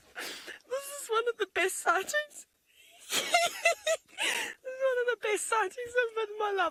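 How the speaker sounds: very high, tearful voice, crying through words. Speaker tells everybody this is among the best sightings of their life, crying with emotion. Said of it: "I'm crying".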